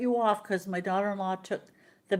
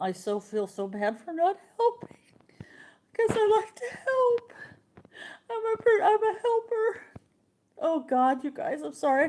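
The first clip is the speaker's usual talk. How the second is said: crying, tearful, wavering, swooping voice; 11 semitones higher than usual. Speaking to viewers about feeling bad for not helping, crying while talking. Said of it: "I had no idea I was gonna cry".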